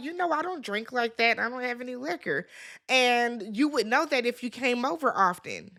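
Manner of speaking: ordinary talk, nothing marked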